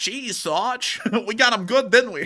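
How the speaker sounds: very high, slow, fake Boston soldier accent. Voicing a soldier seen in old footage: put-on boston soldier voice. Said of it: "gives off vibes that he would have a voice like".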